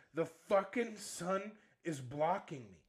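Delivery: mock furious, angry swearing yell. Retelling how a son swore at his mom, imitating an angry yell. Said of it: "he's just swearing at her and yelling".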